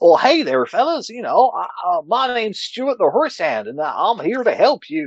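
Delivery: very high, squeaky, silly, over-the-top voice. Showing how to invent a character voice on the fly, as Stuart the Horse Hand. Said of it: "a silly little, you know, over-the-top voice like that".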